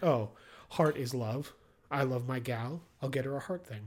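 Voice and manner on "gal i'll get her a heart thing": ordinary talk, nothing marked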